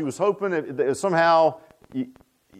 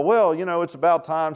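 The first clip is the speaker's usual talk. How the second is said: ordinary talk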